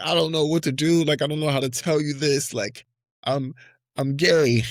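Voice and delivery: acted high, scared, teary voice that stalls. Retelling coming out to a sister on the phone: imitating own past crying. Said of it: "I'm crying. I'm like".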